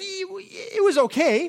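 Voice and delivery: put-on high, slow Texan accent. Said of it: "And the guy from Texas says".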